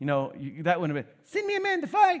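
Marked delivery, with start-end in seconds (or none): 1.2-2.2 very high-pitched voice without any boom. Explaining why Goliath's voice couldn't be like Mike Tyson, in a Mike Tyson impression. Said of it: "it couldn't have been like Mike Tyson".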